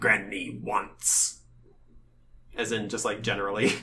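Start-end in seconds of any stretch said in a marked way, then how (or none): 0.0-1.4 croaking monster voice. A creature finally answers the party's question after a pause, croaking. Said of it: "it opens its mouth and it croaks".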